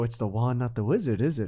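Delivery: muttering under breath. Retelling a remark after someone missed a putt: imitating muttering under breath. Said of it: "And under my breath".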